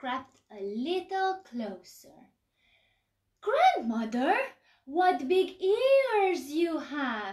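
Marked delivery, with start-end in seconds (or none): 3.4-7.3 high, loud, gasped exclamation, stretched out. Creeping closer to the wolf in grandmother's clothes, she speaks: gasping.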